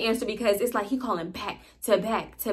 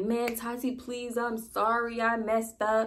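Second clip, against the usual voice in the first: put-on crying, quieter and slower; 6 dB quieter than usual. Retelling his phone call to her, imitating him crying while pleading. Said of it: "he crying like".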